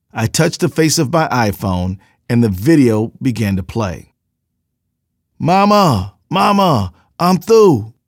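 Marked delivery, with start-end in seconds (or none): 5.3-7.8 high, slow, stretched-out shout. Narrator reading an account of a video quotes a man pinned under an officer's knee, shouting.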